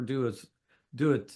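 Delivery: ordinary delivery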